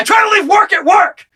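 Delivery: shrill, very high, angry, grumbling put-on voice. Acting out a tired worker at home who is loud noises bother: mad. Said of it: "he's so mad".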